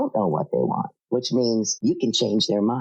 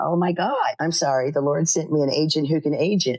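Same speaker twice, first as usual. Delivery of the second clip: put-on, snide, bitchy sarcasm in a high gush; 5 semitones higher than usual. Retelling a reply to an agent who called back: own sarcastic reply. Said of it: "Yay me for being sarcastic and bitchy".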